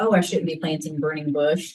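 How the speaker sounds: ordinary talk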